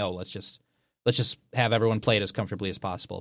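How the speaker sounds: ordinary delivery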